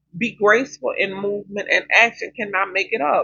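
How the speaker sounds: normal talking voice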